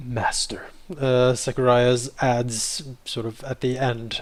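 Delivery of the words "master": venomous, sneering sarcastic tone. Voicing a character who adds a title at the end: venomous, sarcastic. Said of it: "with a bit of a hint of venom and sarcasm".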